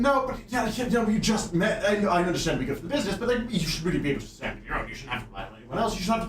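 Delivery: flustered, fast, anxious, stuttering, stammering babble. Retelling the father arguing with his daughter: imitating anxious fast talking. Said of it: "talking fast, being very anxious about it".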